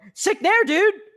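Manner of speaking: hyped announcer style, very high, odd intonation, voice crack. Imitating an excited commentator's strange intonation: imitating excited commentator with voice crack. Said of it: "they'll say it in the strangest intonation".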